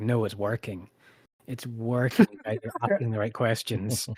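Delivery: ordinary delivery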